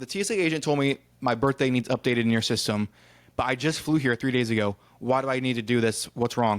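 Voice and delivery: ordinary talk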